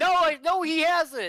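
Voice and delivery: play-acted flustered, stop-start panic, very high, very slow. Retelling her reply as the speaker walked away: imitating panicked denial. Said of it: "in her panic".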